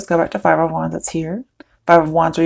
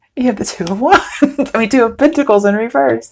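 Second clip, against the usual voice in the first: high, talking through laughter, barely getting words out; 6 semitones higher, 3 dB louder than usual. Naming a tarot card after a surprising draw, laughing while talking. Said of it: "I can't even talk".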